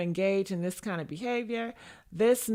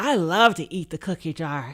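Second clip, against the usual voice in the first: put-on, loud, eager, people-pleasing pick-me voice; 4 semitones lower, 5 dB louder than usual. Acting out how a pick-me answers: imitating a pick-me. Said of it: "with a pick me, be like".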